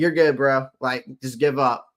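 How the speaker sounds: usual speaking voice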